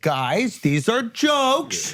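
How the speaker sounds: fake condescending voice. Retelling how Ricky addressed the actors: imitating Ricky patronizingly. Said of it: "he patronizingly says".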